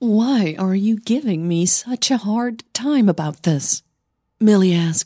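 plain reading voice

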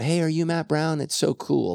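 put-on young kid voice, high, shouting out. Retelling a young kid at the grocery store: imitating a kid screaming. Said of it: "some young kid screamed out".

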